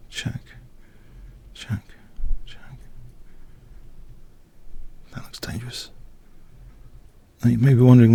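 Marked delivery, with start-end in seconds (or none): 0.1-5.9 soft, hushed whisper. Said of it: "why I'm whispering".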